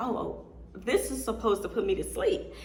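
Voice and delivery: ordinary talk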